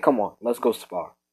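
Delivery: plain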